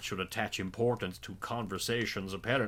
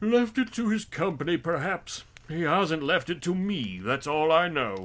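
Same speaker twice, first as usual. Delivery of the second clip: joking through a big loud yawn, pitched up; 8 semitones higher, 8 dB louder than usual. Narrator reads the large-chinned man answering the red-faced gentleman: yawning while speaking. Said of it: "said a great fat man with a monstrous chin, / said a great fat man with a monstrous chin, / said a great fat man with a monstrous chin, / said the first with a yawn".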